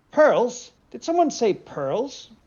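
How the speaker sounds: slightly squeaky creature voice. A creature sticks its head out of the water to speak, in a slightly squeaky voice. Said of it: "says in a slightly squeaky voice".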